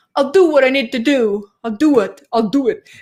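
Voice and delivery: hard-nosed, menacing mafia-type street thug voice. Mocking an elected official's talk about stay-at-home orders, Doug Ford as mafia thug. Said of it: "like almost like a mafia mafia type thug".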